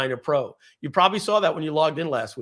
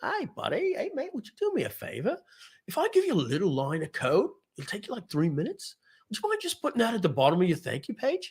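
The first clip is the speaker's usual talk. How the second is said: soft, sing-song put-on Australian accent throughout; 5 semitones higher, 5 dB quieter than usual. Acting out asking a contact for a favor, in an australian accent.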